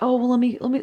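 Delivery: sweet, soothing, sugary coaxing voice, high and quick.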